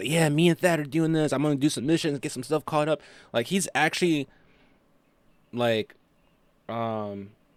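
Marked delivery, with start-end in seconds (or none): 0.1-3.0 acted-out, eager, fast, excited chatter. Retelling a friend's words about getting back into gaming: imitating an excited friend. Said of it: "I can hear it in his voice, like, his excitement playing".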